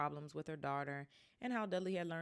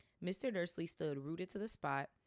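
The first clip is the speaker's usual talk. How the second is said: ordinary delivery, nothing marked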